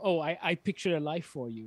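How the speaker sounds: normal talking voice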